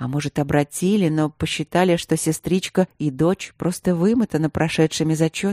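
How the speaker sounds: ordinary delivery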